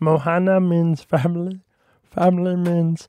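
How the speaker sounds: slow, deliberate, high-pitched, drawn-out little cartoon voice. Doing a requested impression of Stitch: Stitch voice. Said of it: "Stitch from Lilo and Stitch".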